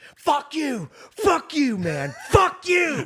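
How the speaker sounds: shrill, very high, loud screaming fit. Retelling a guy standing up mid-show, imitating a guy screaming. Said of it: "started screaming".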